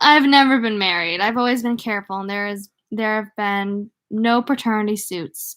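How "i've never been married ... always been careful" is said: plain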